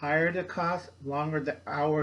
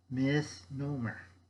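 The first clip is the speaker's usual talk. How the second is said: slow, deliberate, drawn out syllable by syllable; 3 dB quieter than usual. Explaining to listeners why a term is a misnomer, said slowly. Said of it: "I'm saying it slowly".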